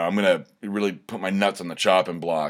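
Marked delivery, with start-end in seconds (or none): none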